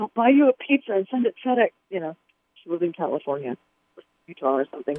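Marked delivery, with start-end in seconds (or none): 0.0-1.7 put-on beseeching, eager-to-please, begging tone. Retelling a phone call to a booking agent: imitating own begging. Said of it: "begging and pleading".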